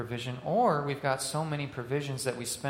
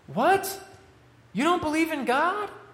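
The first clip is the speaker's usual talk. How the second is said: very high, shrill, stunned, shocked disbelief; 6 dB louder than usual. Retelling a shut-in's reply to a staff member, in a mock-shocked tone. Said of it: "replies in a shocked tone".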